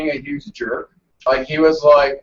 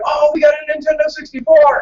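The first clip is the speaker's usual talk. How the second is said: put-on high, loud, thrilled child's cry of joy. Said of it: "My first good dream was like".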